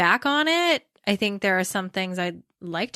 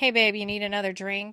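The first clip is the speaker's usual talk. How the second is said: mock smoothly confident delivery; 4 dB quieter than usual. Retelling how they talked to college guys while waiting tables: imitating own past smooth confident tone. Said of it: "I could say that so smoothly and confidently".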